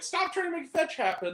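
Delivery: mock very high-pitched cheering shout. Retelling the crowd yelling movie quotes at a candy deliverer: retelling yelling a movie quote. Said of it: "we were just here yelling quotes at him".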